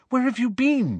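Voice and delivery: worried, anxious, very high-pitched voice. Springing up as the other returns through the portrait hole: anxious. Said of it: "said Hermione anxiously".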